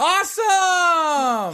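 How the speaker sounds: over-the-top put-on excitement, very high, shrill, drawn-out. Making up for earlier flatness: fake overenthusiastic. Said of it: "I'm making up for my enthusiasm".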